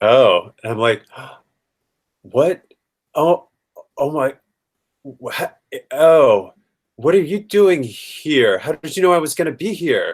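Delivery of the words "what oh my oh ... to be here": acting terrified, higher pitch. Aaron walks up behind and puts his hand on your shoulder; playing terrified. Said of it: "I'm playing terrified of Aaron".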